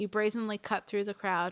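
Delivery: plain reading voice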